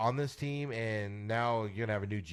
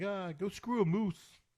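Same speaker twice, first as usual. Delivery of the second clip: fed-up, angry Canadian hockey player, high and slow; 9 semitones higher than usual. Joking about a Canadian hockey player who gets mad: mock angry Canadian player. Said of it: "somebody's gonna get mad".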